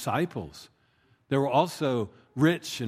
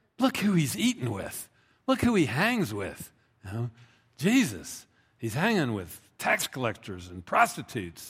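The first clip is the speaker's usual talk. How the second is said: mock, disapproving muttering and grumbling. Speaker acts out the Pharisees' complaint about Jesus, retelling a disapproving mutter. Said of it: "they're muttering".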